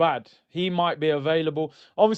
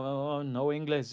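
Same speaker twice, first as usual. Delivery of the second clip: put-on confused voice, quieter; 2 semitones lower, 8 dB quieter than usual. Retelling asking a non-english speaker for directions; imitating the foreigner's reply. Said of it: "They're like".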